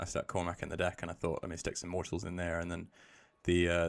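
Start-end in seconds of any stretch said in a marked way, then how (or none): none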